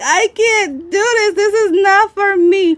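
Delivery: mock very high, tearful, sobbing voice of despair. Retelling the moment of breaking down: retelling own crying. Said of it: "I started crying".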